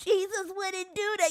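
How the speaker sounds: play-acted, yelled screaming. Mocking people who object that Jesus wouldn't do that: imitating people screaming. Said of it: "y'all up here screaming".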